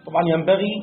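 ordinary delivery

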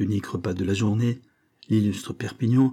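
plain reading voice

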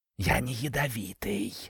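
soft, hissing snake voice. Narrator reads a talking snake answering the narrator, in a hissing snake voice. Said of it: "прошипел змей".

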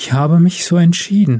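low-key, simple, understated, plain delivery. A woman speaks to Steven as he holds her tighter: said quietly. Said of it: "sagte sie leise".

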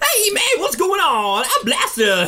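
put-on voice, very high, excited and squeaky.

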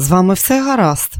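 ordinary delivery

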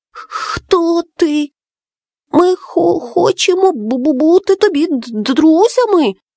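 stammering. A frightened little one greets a strange creature, stammering. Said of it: "затинаючись, промовив Макулє".

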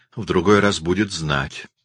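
ordinary delivery, nothing marked

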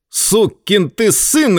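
short, high, barked outburst. A man about to rush at another man: barked. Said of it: "рявкнул Джо".

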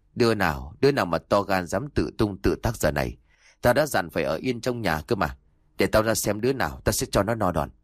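plain

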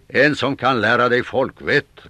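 loud, angry shout. Narrator reads a man retorting to a stranger, shouted back. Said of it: "ropade han tillbaka".

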